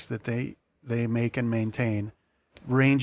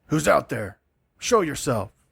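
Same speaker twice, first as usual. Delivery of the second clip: harsh, rough, gruff barking shout; 3 semitones higher, 3 dB louder than usual. Narrating a tabletop scene, voicing someone hidden inside who calls out, rough shout. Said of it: "you hear a, a rough voice shout".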